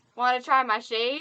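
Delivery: booming, very loud Southern American drawl. Retelling what a cowboy said after turning around: imitating a southern accent. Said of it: "in a southern accent".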